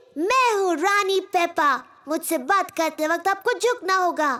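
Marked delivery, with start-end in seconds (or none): none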